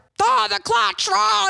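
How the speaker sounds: high, raspy, rough, impatient yelling holler. Retelling a driving lesson where a dad yelled: imitating dad yelling. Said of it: "yelling at me".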